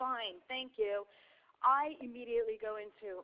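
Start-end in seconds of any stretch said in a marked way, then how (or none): 0.0-1.1 mock grudging, eye-rolling reluctant tone. Retelling a child's reply to a gift: imitating an eye-rolling thank you. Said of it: "he's rolling his eyes".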